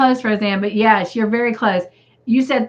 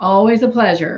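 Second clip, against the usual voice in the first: imitated sarcastic tone. Retelling a character's words while hanging up the phone: imitating a sarcastic tone. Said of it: "you can just hear the sarcasm in his voice".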